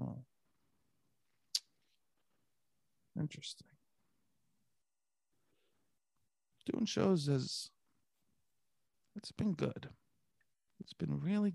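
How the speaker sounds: very quiet, hushed, drawing-in whisper. Showing the Don Draper trick while answering how doing shows has been. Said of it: "I kind of whisper".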